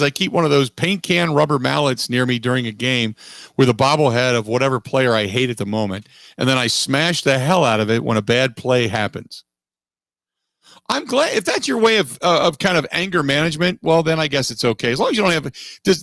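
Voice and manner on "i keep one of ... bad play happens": usual speaking voice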